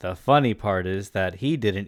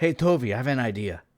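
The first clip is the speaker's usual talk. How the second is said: put-on Mexican accent; 3 semitones higher than usual. Acting out a character's line to toby: put-on mexican accent. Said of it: "Sorry, I'm all Mexican now".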